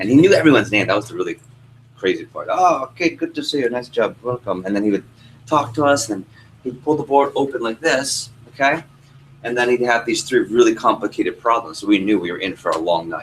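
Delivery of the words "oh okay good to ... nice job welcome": put-on heavy, laid-on Indian English accent. Act out Doctor Bhagat coming around and greeting those who showed up, in Doctor Bhagat's thick Indian accent. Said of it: "had this really thick Indian accent".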